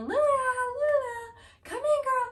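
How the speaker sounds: high, loud calling yell, word stretched out. Retelling calling someone back inside from outside, retelling yelling her name. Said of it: "and I'm yelling".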